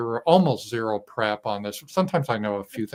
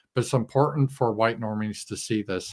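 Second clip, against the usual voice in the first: ordinary talk, nothing marked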